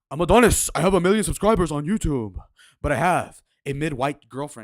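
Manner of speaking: very loud, booming voice at full volume. Quoting a despised YouTuber's words: imitating Hamza's deep voice. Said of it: "He's got the deep voice".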